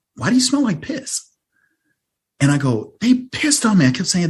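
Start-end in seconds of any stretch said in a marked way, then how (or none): 3.0-3.9 very high, shrill screaming outburst. Podcast guest retelling what they said to their mom at the door: retelling a scream. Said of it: "I'm just screaming".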